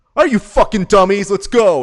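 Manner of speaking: very loud, high-pitched, taunting shout. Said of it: "he comes in, looks at press row, and goes".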